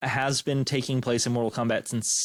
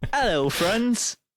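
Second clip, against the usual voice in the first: affected, put-on English accent, pitched up; 9 semitones higher, 3 dB louder than usual. Describing a guy back from study abroad in England, imitating his English accent. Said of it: "comes back from England after study abroad and he has the same accent".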